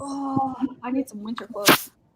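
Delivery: snippy, unfriendly delivery. Finish your story by acting out how they talk, in an impression of Snobby and Dusty. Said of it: "that is my impression of Snobby and um".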